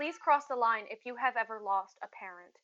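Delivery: serene, gentle, very calm, soothing announcer tone. Retelling what a woman on a microphone said, imitating a very calm voice. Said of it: "this very calm voice".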